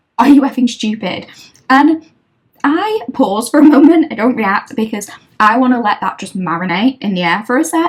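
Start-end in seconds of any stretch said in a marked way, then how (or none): 0.2-1.3 put-on screamed outburst. Retelling a caller's words on the phone: imitating someone screaming. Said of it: "Then she screams at me".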